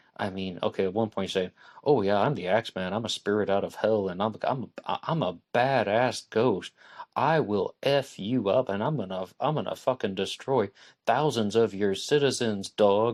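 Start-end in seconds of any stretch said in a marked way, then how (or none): 1.8-13.1 gentle voice straining to sound tough. Retelling the Axeman's words to New Orleans, mock-tough like a gentle person. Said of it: "very very gentle person who's trying to sound very tough".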